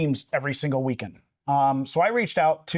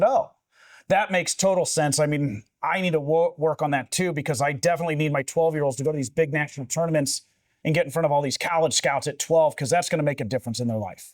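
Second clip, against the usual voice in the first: usual speaking voice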